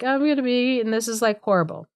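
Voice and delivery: blubbering, sobbing, crying through the words. Retelling a fairy tale, the girl fears being eaten: imitating someone crying and sobbing. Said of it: "crying and sobbing 'cause she's like".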